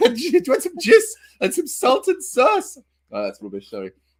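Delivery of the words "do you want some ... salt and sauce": very high, squeaky Scottish granny voice. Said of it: "I was like Missus Doubtfire".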